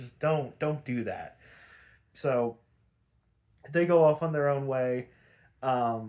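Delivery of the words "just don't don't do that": usual speaking voice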